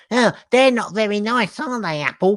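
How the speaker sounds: mock high-pitched, whiny, taunting voice. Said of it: "But it was in that voice".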